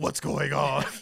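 very loud, raspy, big tough-guy voice. Describing how someone does his bad-dude voice: raspy Batman voice. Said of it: "You know how Batman talk with that raspy voice?".

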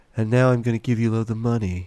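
put-on sleepy, drowsy voice. Imitating a man swayed by adverts, doing his voice with a sleepy quality. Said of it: "that kind of sleepy quality to his voice".

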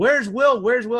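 crowd calling out, high, amused, half-laughing. Retelling how everyone kept yelling for a missing player, imitating the yelling. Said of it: "Everyone's yelling it".

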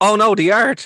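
screaming the words out, high-pitched cry. Recapping a movie plot, retelling a scream. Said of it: "and I'm just screaming".

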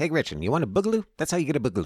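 very high, loud, swooping, swinging delivery. Joking about the governor, doing a Ben Shapiro impersonation. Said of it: "That's my, uh, Ben Shapiro im-, impersonation".

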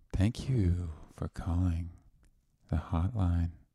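sultry, seductive, sexy hotline-style voice. Joking a hotline greeting should sound hot: hot, seductive voice. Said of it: "You could at least say it in a hot voice".

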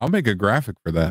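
ordinary talk, nothing marked

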